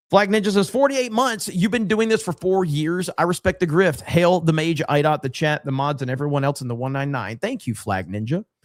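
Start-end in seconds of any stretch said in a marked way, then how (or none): none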